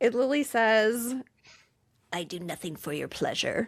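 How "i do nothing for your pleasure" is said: weird, low, hushed, possessed-sounding voice. Retelling a scene, the speaker quotes Lily's line in Lily's weird voice. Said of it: "in like this weird voice".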